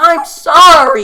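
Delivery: very loud, very high, shrill, drawn-out shriek. Retelling how the other speaker just yelled into the microphone: imitating someone's loud apology.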